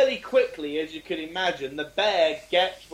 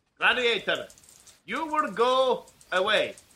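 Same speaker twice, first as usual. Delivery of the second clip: announcer-style referee call with raised pitch; 5 semitones higher than usual. Chatting about an old Saturday-night TV show, quoting its referee: Gladiators referee impression. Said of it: "you sound a bit like actually the referee from Gladiators".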